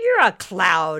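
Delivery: loud, scornful, dismissive, derisive scoff. A man with a drink answers a talking cloud, scoffing. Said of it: "Ricky scoffed".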